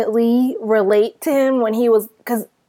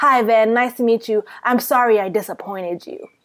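put-on petty, passive-aggressive tone. Retelling how one man answered another after a meeting: imitating a passive-aggressive tone. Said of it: "passive-aggressive and petty".

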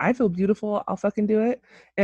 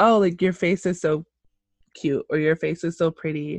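usual speaking voice

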